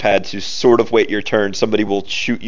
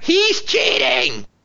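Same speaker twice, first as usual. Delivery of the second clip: very high, squeaky, creaky nerd-voice squeal. Describing a game enemy falling back after a hit, squealing nerd voice. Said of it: "you hear him squeal in nerd voice".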